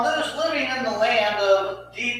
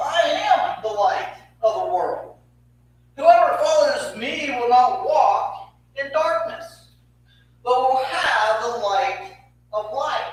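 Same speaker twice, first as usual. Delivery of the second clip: loud, acted, proclaiming call-out. Re-enacting a dramatic proclamation stepping forward in that setting, calling out loudly. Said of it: "to call out in a loud voice".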